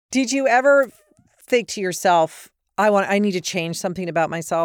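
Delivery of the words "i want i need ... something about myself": normal talking voice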